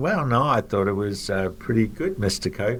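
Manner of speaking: soft, mumbled under the breath. Retelling answering the CEO's request for feedback, imitating own mumbling. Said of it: "I kind of mumbled".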